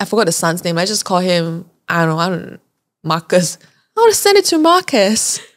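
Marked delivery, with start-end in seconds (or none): 4.0-5.4 terrible, high-pitched put-on Australian accent. Speaker retelling what Linda said to them, in a bad Australian accent. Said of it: "That's a terrible Australian accent".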